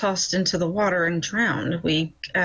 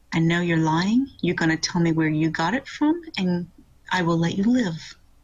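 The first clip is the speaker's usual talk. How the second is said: calm, low-key, menacing tone, leaning close. Player's character leans into a lying man's face, very quiet. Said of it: "very quietly say".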